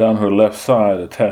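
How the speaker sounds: ordinary delivery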